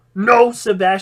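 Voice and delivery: ordinary talk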